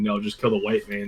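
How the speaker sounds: normal talking voice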